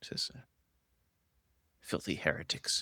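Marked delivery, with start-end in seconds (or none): 1.8-2.8 whispered with scornful, disdainful contempt. Voicing a captured cultist speaking to the party: disdainful. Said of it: "looks at it with a bit of disdain".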